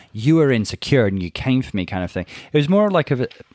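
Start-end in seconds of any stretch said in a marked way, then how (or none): none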